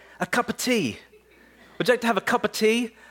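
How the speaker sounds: high, quick mock British accent.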